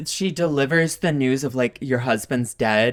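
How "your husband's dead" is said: put-on flat, emotionless manly voice, lower. Retelling how a film character delivers bad news: imitating emotionless manly delivery. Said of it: "she does it in such an emotionless, like, manly way".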